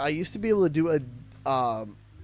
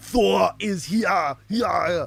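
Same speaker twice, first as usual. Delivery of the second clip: loud, booming, very slow slapstick put-on voice; 2 semitones higher, 5 dB louder than usual. Doing the StarCraft Thor line as slapstick Arnold Schwarzenegger voice. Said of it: "It's all just the same slapstick Arnold Schwarzenegger, you know, voice".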